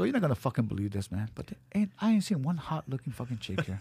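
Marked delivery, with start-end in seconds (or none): none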